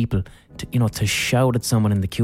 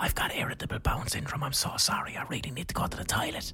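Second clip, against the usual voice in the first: hushed, urgent whisper under the breath; 4 semitones higher, 13 dB quieter than usual. Recounting a queue row, the speaker quotes the other person whispering again: retelling a whisper. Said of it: "The person whispers again".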